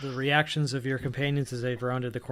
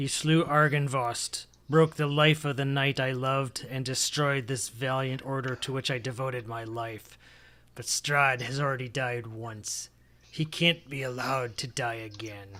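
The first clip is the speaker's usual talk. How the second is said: patchy, mottled character voice. Narrating a game, the speaker voices a figure on a throne in a mottled voice. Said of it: "he says, / and you hear this kind of mottled voice say".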